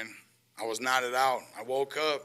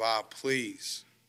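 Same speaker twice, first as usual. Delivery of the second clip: put-on tearful, crying voice; 3 semitones lower than usual. Retelling the father's words while being led out: imitating father crying. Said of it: "He's crying".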